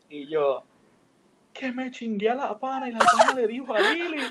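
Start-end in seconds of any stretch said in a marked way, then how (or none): 1.5-4.2 loud, very high crying-out, sobbing wail. Retelling words said to a best friend in the street, imitating own crying. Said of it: "Y yo me levanto y estoy llorando".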